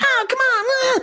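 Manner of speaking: very high, whiny squeal. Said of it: "his voice is kinda whiny".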